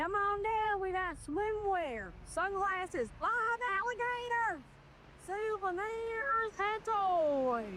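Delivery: mechanical robot voice, southern accent, drawn-out words. Listing goods on offer to come on down for: southern robot voice. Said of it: "like a southern robot?".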